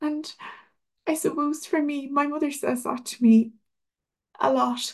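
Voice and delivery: voice breaking, moved. Recalling what the late father said at his last christmas, getting emotional. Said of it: "I get emotional every time I say this".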